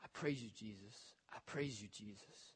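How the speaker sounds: very quiet, tearful whisper through crying. Retelling a frail lady's words while washing her feet, imitating a tearful whisper. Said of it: "she's just crying and whispering".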